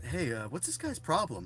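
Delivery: plain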